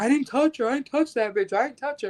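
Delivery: play-acted weepy, tearful voice, high-pitched. Retelling a college student's denial to a medic, imitating someone in tears. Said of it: "he was, like, in tears".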